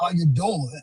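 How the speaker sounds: very low, deep bass voice. Imagining being six foot five, going around talking, very low voice. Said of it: "with a low, low, low voice".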